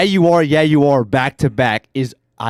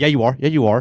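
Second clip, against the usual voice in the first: put-on stern scolding tone, as if to a child; 2 semitones lower than usual. Retelling how a coach cut off a reporter: imitating Mick Cronin scolding. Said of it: "scolding this reporter like it's his twelve-year-old son".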